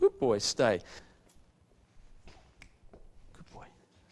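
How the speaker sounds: nice, sweet, breathy near-whisper. Praising the dog Nicky while training him, in a nice sweet voice. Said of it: "that nice sweet voice that I'm using".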